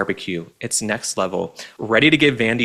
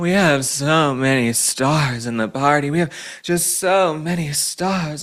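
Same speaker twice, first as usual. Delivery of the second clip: mock drunk slurring, slower; 5 semitones higher than usual. Speaker mocking Kamala Harris's podcast appearance, Kamala Harris slurring impression. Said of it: "she's on that podcast slurring".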